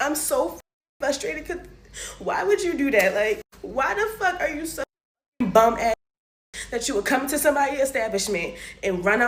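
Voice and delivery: tearful, crying speech. A host vents frustration on the show, crying while talking. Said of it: "Can't believe I'm crying".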